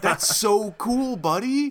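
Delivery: put-on very high, loud cheering kid-talk voice. Describing a reaction, the speaker acts it out as if praising a little kid. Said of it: "like you're watching a little kid do a flip".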